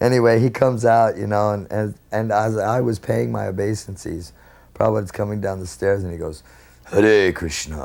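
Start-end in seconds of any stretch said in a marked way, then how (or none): 6.9-7.8 low, very dark, deep voice. Retelling how a person on the stairs greeted someone: imitating a dark, deep voice. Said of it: "in this real dark, deep voice".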